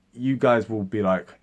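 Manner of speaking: usual speaking voice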